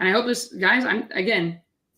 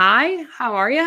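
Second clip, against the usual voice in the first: very bubbly, high-pitched and drawn out; 5 semitones higher, 4 dB louder than usual. Demonstrating the introduction used in role plays before delivering bad news, bubbly. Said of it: "I'm very bubbly when I say".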